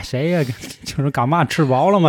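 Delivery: put-on Tianjin dialect accent. Retelling how dad answers calls from home, in Tianjin dialect. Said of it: "立马都切换了啊".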